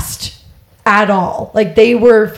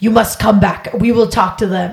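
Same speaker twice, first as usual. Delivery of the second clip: clumsy, butchered put-on Russian accent. Retelling what the Russians told the group outside, butchered Russian accent. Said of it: "I'm butchering this accent".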